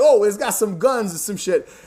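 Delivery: bad put-on New York accent. Griping about an actor's casting, mimicking his line in a shitty New York accent. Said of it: "like a shitty New York accent".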